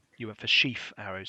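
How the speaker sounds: plain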